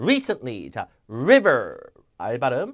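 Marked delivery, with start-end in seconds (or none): 0.0-0.7 recently, first syllable stressed. Korean lesson on english word stress: stress on re in recently. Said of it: "앞에 강세".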